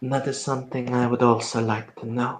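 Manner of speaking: very, very quietly spoken, hushed. A storyteller voices Delano answering before a Sabbat representative: Delano, very quietly. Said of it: "Delano will kind of say very, very quietly".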